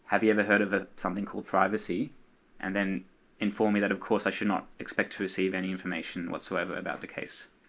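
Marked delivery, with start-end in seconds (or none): none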